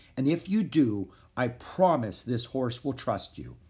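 ordinary delivery

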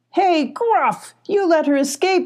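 full, high-pitched yell. A character returning from a search calls out to a companion, yelling. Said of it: "yelled Scar".

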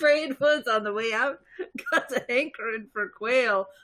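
put-on Scottish accent. Playing a character in a comedic podcast scene, the speaker uses a scottish accent. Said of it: "what was that accent I was doing?".

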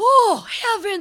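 high, loud, aghast horrified cry.

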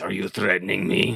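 rough, creaky growl from the throat. Game master voicing a character confronting the players, growling. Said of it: "he kind of growls and says".

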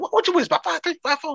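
high-pitched yelling. Retelling a chance encounter at the gate, imitating Tisha Campbell yelling across it. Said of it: "yelling across the thing".

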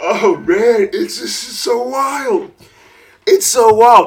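slow talk through laughter, cracking up mid-sentence. Reacting to a frustrating car situation, laughing while talking. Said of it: "I think I'm just laughing".

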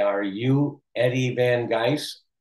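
very slow, careful, deliberate word-by-word delivery. Retelling how people expecting a heavy accent greeted him: speaking very slowly. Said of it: "they said very slowly".

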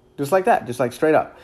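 ordinary talk

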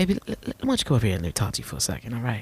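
slick, cool, smooth, calm pimp voice. Explaining how pimps talk and acting one out: smooth pimp voice. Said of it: "They do be having this smooth voice".

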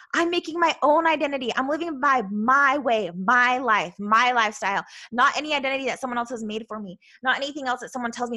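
usual speaking voice

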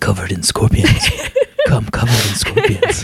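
swooping put-on comic-book superhero voice, swung around. Recalling a scene from the animated series, in a Wolverine voice. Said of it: "It's my Wolverine voice".

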